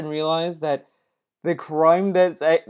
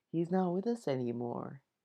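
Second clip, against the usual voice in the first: very quiet, hushed, fake solemn, somber tone; 13 dB quieter than usual. Mocking another speaker's line by copying it: imitating a fake sad tone. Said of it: "he uses his fake-ass tone".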